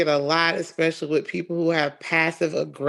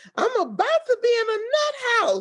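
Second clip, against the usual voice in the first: very high, swooping, irritable, exasperated yell. Retelling an argument with her husband: imitating herself yelling. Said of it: "yelling at him".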